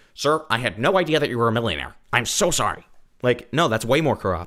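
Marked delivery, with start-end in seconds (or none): 0.2-2.9 mock apologetic put-on voice. Mocking the idea of police apologizing to a millionaire: imitating a police officer apologizing. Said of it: "immediately release the cops and be like".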